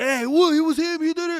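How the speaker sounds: very high, loud, affronted and defensive tone. Retelling how Xiao reacted to the headbutt: imitating Xiao, offended and defensive. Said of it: "Xiao got really offended, and he was like".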